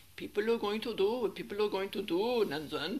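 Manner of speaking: loud, clumsy, badly done Swiss-German accent. Quoting teacher Vanya's saying, speaker uses a bad Swiss-German accent as Vanya. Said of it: "That's a very bad Swiss-German accent".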